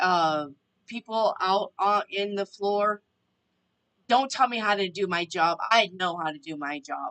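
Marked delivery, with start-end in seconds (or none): 4.1-7.1 put-on harsh, angry voice. Retelling a man scolding him in front of coworkers: mock-angry scolding. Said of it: "he jumped my ass".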